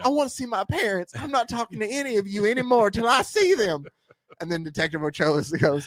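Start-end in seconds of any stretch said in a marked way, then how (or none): 0.0-3.8 very high, put-on female voice. Retelling what she says in the scene, doing her voice. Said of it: "I'll do the voice".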